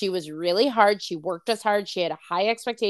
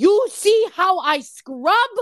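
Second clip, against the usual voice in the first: mock angry yell, high and drawn out; 10 semitones higher, 5 dB louder than usual. Retelling a former boss at the sink: imitating someone screaming. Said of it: "she would, like, scream at me".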